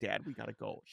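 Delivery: put-on crying voice. Father retelling his crying daughter among the graves: imitating a crying daughter. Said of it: "she's crying. She's like".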